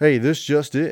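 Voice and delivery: loud breaking-news anchor announcer voice. Podcast co-hosts trying out a breaking news bit; breaking news announcer voice. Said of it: "Could we do like a breaking news thing?".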